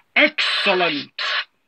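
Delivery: machine-like, robotic delivery. Speaker demonstrating voices for each Cyberman era, doing an 80s Cyberman voice. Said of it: "I alter my voice slightly for the 80s Cybermen".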